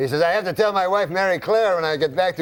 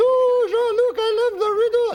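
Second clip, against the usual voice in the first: woman's voice, pitched very high. Retelling a story, the speaker voices the woman's reply in Mary Claire's high voice. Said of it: "She's a woman, high voice".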